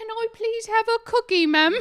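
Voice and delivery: very loud, very high, put-on street-urchin British accent. Imitating a younger self asking at a bakery for a cookie: put-on British accent. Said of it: "Did you say it in a British accent?".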